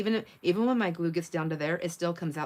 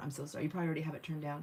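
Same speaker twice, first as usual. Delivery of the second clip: soft, hushed half-whisper, voice dropping away; 8 dB quieter than usual. Apologizing to Kat in chat, who is dealing with an illness: half-whispering. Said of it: "So I'm gonna whisper".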